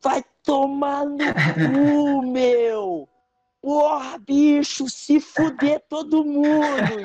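put-on thick carioca Rio accent, very high and slow. Recounting a performance, the speaker quotes a random woman in the stands, imitating a strong carioca accent. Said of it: "E ela era muito carioca".

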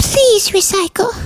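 odd, little, very high weird fairy voice. Asked for one more sentence, speaking in a weird fairy voice. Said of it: "now the hosts are Austin and like a weird fairy".

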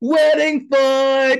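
very high, loud, hyped-up shout. Retelling how the DJ announced a fight at the wedding: imitating DJ Ched. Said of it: "He's like, he's like".

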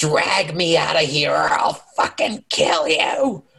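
witch voice, crying, shouted, shrieked.

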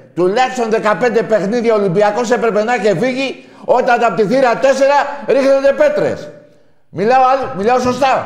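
very loud, shrill, high-pitched shouting. Mid-argument with a friend who asks why he is shouting, shouting. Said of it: "Τώρα γιατί φωνάζεις".

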